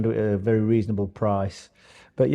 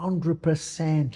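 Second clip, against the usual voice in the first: put-on Irish accent, pitched higher; 5 semitones higher, 4 dB quieter than usual. Retelling an athlete's answer about his diet, imitating his Irish accent. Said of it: "like with his Paddy accent".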